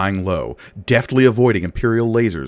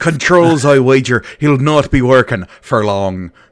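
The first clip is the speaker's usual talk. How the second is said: loud, put-on, phonetic Irish accent throughout; 2 semitones higher, 6 dB louder than usual. Reading a character's line aloud: phonetic Irish accent. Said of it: "in a phonetic Irish accent".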